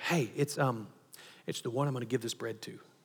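barely audible, very quiet half-whisper. Retelling the answer to the question of who it is: acting out a half-whisper. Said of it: "whispering back".

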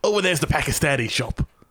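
put-on high-pitched Cockney accent, tour-guide patter. Retelling a london walking tour, speaker imitates the guide's cockney accent. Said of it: "the guy leading the tour is a Cockney".

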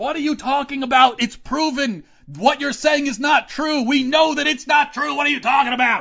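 very high, loud, frustrated, exasperated yelling. Recalling arguing with people online, retelling own yelling at the screen. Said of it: "And I'm yelling".

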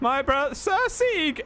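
booming announcer tone.

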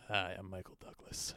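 breathy, all-breath whispered voice. Trying to come up with an impression: Michael Douglas impression. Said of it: "fodder to do an impression".

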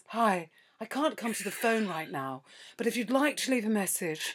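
soft, refined, posh actorly voice. Repeating a voicemail greeting recorded in an actor's voice. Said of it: "my actor's voice".

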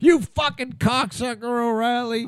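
put-on, very high, furious, angry screaming. Retelling how a man screams insults at the tv news; imitating someone screaming at tv. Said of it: "He screams at the TV".

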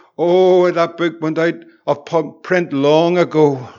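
put-on man's Scottish accent. Retelling a phone call to a bookshop man in Edinburgh: wee Scottish accent. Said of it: "the wee Scottish accent in the on the background says".

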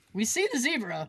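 usual speaking voice

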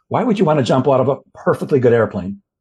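put-on deadpan, dead-serious delivery. Retelling a captain's reply when asked about skydiving, imitating a deadpan reply. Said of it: "deadpan said".

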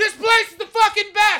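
put-on brash New York accent, very loud and shrill. Giving advice about visiting America, break into an impression of New York. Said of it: "Let me do my impression of New York".

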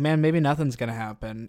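ordinary talk, nothing marked

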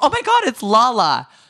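high, loud, excited scream. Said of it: "And I literally screamed".

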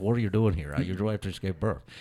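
put-on nasal voice. Retelling what Peyton Manning said in a team meeting: Peyton Manning impression. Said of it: "That's your Peyton Manning impersonation".

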